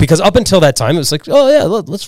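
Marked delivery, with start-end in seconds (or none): 1.3-2.1 high, carefree, dumb snowboarder voice. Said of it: "just a bunch of dumb snowboarders".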